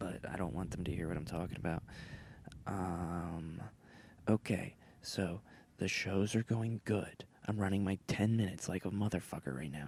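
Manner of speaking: hushed, whispered voice. Speaker whispering so the people nearby won't hear, whispering. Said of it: "I'm sorry I'm whispering".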